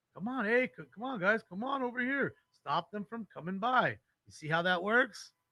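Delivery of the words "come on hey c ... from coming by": urgent, hurrying, rallying tone. Mimicking a bystander on the video calling everybody over: imitating a guy calling everybody over. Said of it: "Got the little cheerleader directing traffic".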